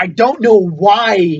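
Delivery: put-on slow, high, loud drawl. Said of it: "I have to turn into Christopher Walken".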